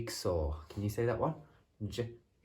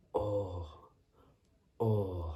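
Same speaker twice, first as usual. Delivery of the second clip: or sound said twice, even and plain. Leading a lesson on one sound, the speaker models it in a quiet voice. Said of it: "Can you say it in a quiet voice?".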